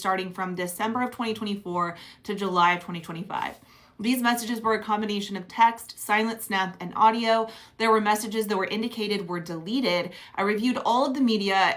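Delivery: normal talking voice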